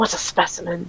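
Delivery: hushed half-whisper under the breath. A curious figure edges closer, eyeing you from all angles, half-whispering under his breath. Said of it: "He whispers under his breath".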